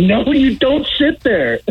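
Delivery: high, slow scolding tone. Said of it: "I can see Galvin saying".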